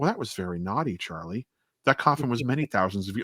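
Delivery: put-on cool, calm, unbothered scolding tone. Imitating a vampire character scolding Charlie: imitating calm unbothered scolding. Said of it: "she's talking to him like a child who mis-".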